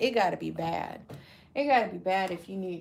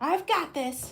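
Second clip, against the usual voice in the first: put-on high, small child's voice; 9 semitones higher than usual. Recalling a sound clip someone used to play, in a little kid's voice. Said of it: "They had um a little little kid's voice".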